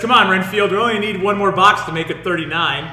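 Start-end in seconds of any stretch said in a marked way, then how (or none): none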